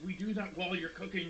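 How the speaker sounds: side-of-mouth half-whisper. Voicing a character who secretly tells a player something: half-whispering out the side of the mouth. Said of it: "she whispers out the side of her mouth to you".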